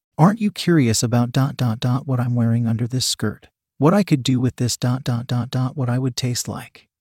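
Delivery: plain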